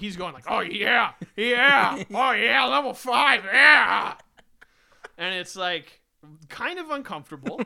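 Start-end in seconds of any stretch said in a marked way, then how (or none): 0.5-4.1 very loud, blaring, drawn-out whooping cheers. Retelling the dog policeman loudly playing a Game Boy at work: imitating Ollie playing loudly. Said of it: "he's doing it very loudly".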